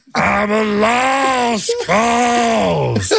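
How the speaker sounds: word "lost" strained up high and drawn out. A radio host does a voice for callers to guess, terrible voice impression. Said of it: "terrible impression".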